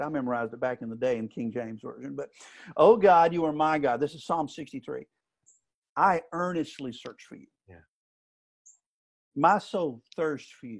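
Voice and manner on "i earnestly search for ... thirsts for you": careful, intent reading, taking each phrase slowly. Reading Psalm 63 aloud from the NLT, with deliberately slow reading. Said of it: "I'm slowing down on purpose".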